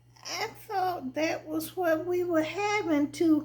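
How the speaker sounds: very high-pitched, whining, whiny voice. Reading a story where a husband answers about the chicken: slow, whining voice. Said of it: "He talked slow and kinda whining".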